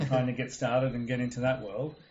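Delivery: normal talking voice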